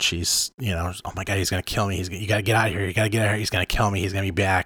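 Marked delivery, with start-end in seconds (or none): 1.0-4.7 play-acted, fast, frantic, panicked babble, rattled off. Speaker retells a girl's words back in the truck, acting out a girl freaking out. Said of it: "And the girl's just freaking out".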